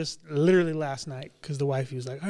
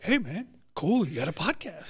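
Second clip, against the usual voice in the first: overdone, exaggerated hulking big-guy voice, swooping pitch. Retelling what a former coworker said popping into his office, very deep voice. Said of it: "You totally did this voice so deep".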